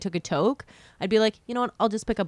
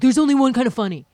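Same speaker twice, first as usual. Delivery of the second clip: loud, pushy, aggressive, insistent voice; 3 semitones higher, 6 dB louder than usual. Retelling what a brother kept saying about comedy: imitating someone aggressive. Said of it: "I'm making him sound very aggressive".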